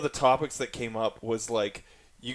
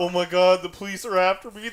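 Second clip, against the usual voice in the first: mock crying, higher and louder; 7 semitones higher, 4 dB louder than usual. Retelling a video where a man cried about police: imitating someone crying. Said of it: "he put up the video crying".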